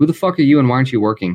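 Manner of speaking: fed-up, exasperated, very frustrated tone. Game master voicing a man with a clipboard whom a player taps: very frustrated. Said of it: "very frustrated".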